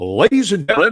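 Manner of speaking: very loud, booming put-on radio announcer voice. Introducing a guest the proper way in a put-on radio announcer voice. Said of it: "let me put on my best radio voice".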